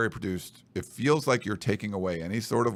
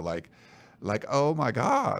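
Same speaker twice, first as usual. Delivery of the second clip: put-on very slow, drawn-out, swooping Valley Girl drawl; 2 semitones higher than usual. Showing how overusing "like" sounds: Valley girl voice. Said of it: "if you're talking like a Valley girl".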